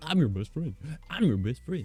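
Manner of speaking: high, put-on, devoted dog voice. Joking about how clingy dogs are: put-on dog voice. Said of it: "A dog's like".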